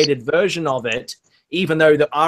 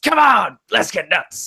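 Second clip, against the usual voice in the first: put-on frantic, unhinged man's voice, pitched higher; 4 semitones higher than usual. Retelling a movie scene: imitating Michael Keaton going crazy. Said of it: "Michael Keaton goes crazy with the fire poker".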